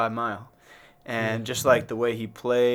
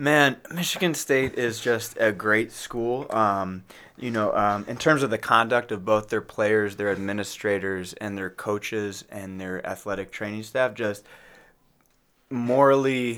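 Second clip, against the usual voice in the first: normal talking voice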